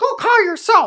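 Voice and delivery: very high, very loud raven-like bird call. Voicing a raven that flies over with a message, in raven voice. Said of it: "That's your raven voice".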